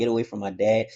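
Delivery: plain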